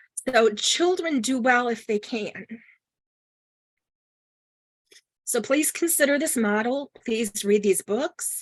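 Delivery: choked up voice, breaking, near tears. Closing a talk while admitting it brings tears: choked up, near tears. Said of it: "and it's making me cry".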